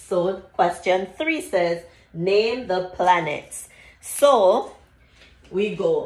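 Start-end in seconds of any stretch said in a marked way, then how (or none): none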